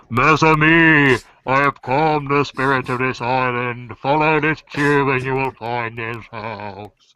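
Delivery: theatrical, distant proclaiming voice, "amis" drawn out. A game master voices a call the players hear from afar: booming voice. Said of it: "hear this booming voice going".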